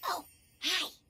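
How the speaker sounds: hushed whisper. Greeting Jeremy, who is on vocal rest, whispering. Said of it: "Why are we whispering?".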